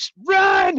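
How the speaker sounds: very high, shrill, high-pitched screaming. Retelling how parents at a kids' T-ball game yell: imitating parents screaming. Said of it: "just screaming".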